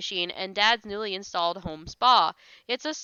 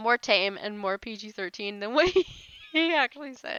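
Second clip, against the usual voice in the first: words broken up by laughter; 2 semitones higher than usual. Refusing to read a chat message aloud, laughing while talking. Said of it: "I can't stop laughing".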